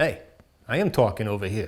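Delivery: put-on talking with a New York accent. Retelling telling off someone who interrupted a talk with the principal, new york accent. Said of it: "I think that's New York".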